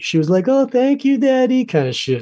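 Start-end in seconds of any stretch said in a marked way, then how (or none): 0.5-1.6 put-on very high baby voice. Retelling a surprise on a talk show, imitating Drew Barrymore talking like a baby. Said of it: "and then she was like a baby".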